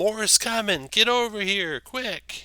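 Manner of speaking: very high, slow, drawn-out halfling shout. Running the game, the speaker voices a halfling calling to the players: halfling yelling. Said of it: "The halfling uh, yells".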